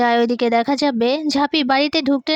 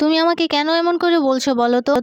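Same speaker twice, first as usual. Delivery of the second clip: ordinary delivery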